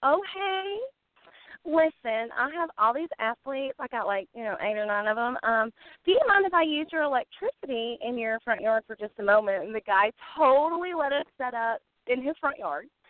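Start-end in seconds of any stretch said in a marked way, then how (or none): 0.0-9.6 very cute, adorable put-on Southern accent. Asking a stranger at his door to use his electricity, adorable Southern accent. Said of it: "I put on my most adorable Southern accent".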